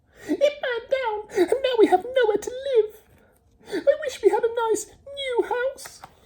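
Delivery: very high, squeaky little mouse voice. Reading a story aloud, voicing the mother mouse, in a squeaky mouse voice. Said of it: "squeaked the mother mouse".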